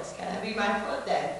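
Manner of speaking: plain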